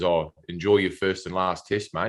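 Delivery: ordinary delivery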